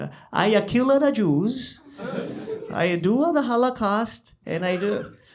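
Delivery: clumsy, botched put-on German accent, very slow, drawn out. Acting out a joke scene in the afterlife: bad German accent as Hitler. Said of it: "I can't do a German accent".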